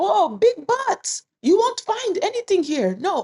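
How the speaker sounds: put-on Vietnamese accent. Retelling what a market woman said after slapping them: imitating a vietnamese accent. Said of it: "she said it with an accent".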